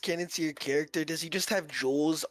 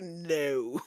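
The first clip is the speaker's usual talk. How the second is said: acted haughty, disdainful critic voice. Joking that a dragon speaks like Anton Ego: Anton Ego voice. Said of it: "Draknar talks like that one critic from Ratatouille".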